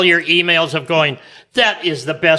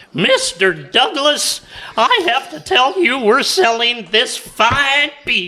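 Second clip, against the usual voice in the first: very high-pitched, slow, drawn-out character voice; 9 semitones higher than usual. Signing off with a Mister Haney bit: Mister Haney voice. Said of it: "they're Mister Haney".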